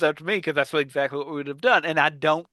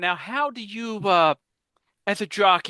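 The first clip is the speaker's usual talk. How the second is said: mock-polite interviewer voice, much slower; 5 semitones higher than usual. Recounting a sketch, the speaker mimics the interviewer questioning a jockey: mimicking a polite interviewer. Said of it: "trying to be polite".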